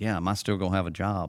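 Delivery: plain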